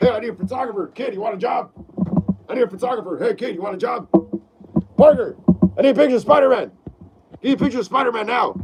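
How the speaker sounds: put-on gruff newspaper boss voice. Reading live chat, doing the newspaper boss asking Parker for photos: J. Jonah Jameson impression. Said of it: "impersonating, uh, J K Simmons as J. Jonah Jameson".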